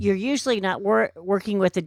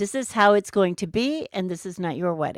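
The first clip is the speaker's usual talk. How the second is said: usual speaking voice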